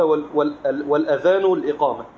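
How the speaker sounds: ordinary talk, nothing marked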